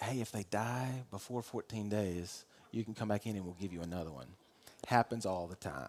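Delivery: very quiet, hushed, confidential half-whisper. Retelling what the lady at checkout said: imitating a half-whisper. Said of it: "kinda whispers over to us".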